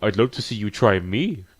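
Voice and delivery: ordinary talk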